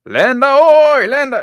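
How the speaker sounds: high, slow, loud far-carrying yell.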